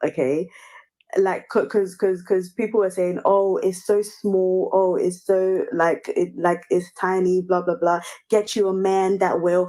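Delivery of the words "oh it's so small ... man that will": ordinary talk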